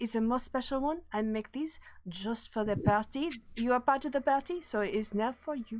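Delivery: clumsy, awkward put-on French accent. Playing a short halfling offering the party a plate of pastries, Madame Grugri's awkward French accent. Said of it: "a short little halfling with an awkward French accent".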